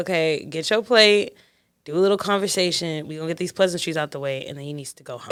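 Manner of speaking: usual speaking voice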